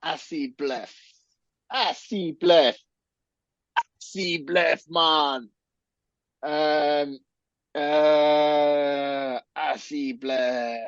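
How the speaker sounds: slow, drawn-out French accent. Repeatedly trying to pronounce an odd word: French-sounding accent. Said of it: "Why do I sound French?".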